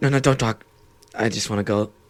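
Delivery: acted creepy man character voice. Acting a sketch as the only customer on guide Brittany's Disneyland tour, creepy guy voice. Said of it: "I'll like act like the creepy guy".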